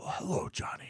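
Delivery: restrained, soft, toned-down breathy whisper. Showing how he greets kids in line as Santa, in a toned-down Mickey Rooney whisper. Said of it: "It's a whisper because I'm a big imposing guy".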